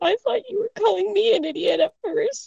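close to tears. [name], with tears in her eyes, answers her companion: tearful [name]. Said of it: "[name] has tears in her eyes as she says".

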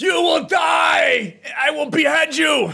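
very high shriek with "die" dragged long. Making up a joking outro for the podcast's end: screaming. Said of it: "you should have screamed that".

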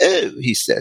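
English accent from Britain.

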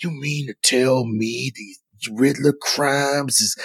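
slow, snarling put-on voice.

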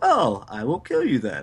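ordinary talk, nothing marked

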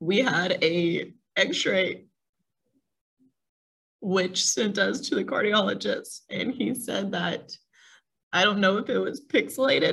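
tearful, holding back tears, on the verge of crying. Recounting a sick baby's hospital stays, on the verge of tears. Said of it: "I'm going to cry now".

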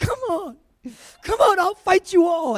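acted crying, tearful and high-pitched. Retelling a fight challenge from basic training, imitating crying while challenging. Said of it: "I started crying and going".

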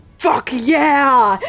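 beastly growling shark voice, drawn-out yeah. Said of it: "you hear a growl like".

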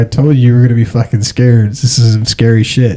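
plain

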